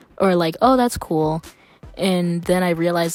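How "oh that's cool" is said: put-on flat, emotionless, toneless voice. Retelling own reply to a friend's news: imitating own flat, emotionless reply. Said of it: "I didn't put emotion into that".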